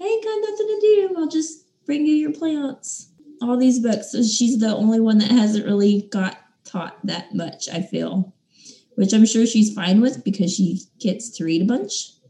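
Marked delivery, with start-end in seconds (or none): 0.0-3.1 high, fast, offhand bored voice. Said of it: "Tris is just sitting there like".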